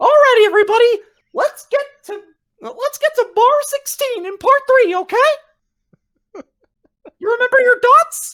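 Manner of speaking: squeaky, high-pitched and loud. Retelling how he ran the entire practice in his Mickey Mouse voice. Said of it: "I'll do my Mickey Mouse voice".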